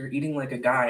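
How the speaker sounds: put-on smug, smirking delivery. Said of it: "he just kinda smirked at me".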